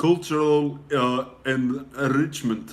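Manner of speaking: speaking with an Arabic accent.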